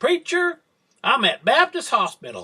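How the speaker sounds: put-on raspy, scratchy, high East Tennessee accent. Retelling a caller phoning the preacher from the hospital, Amy's raspy high East Tennessee voice. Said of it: "in her raspy, high-pitched East Tennessee voice".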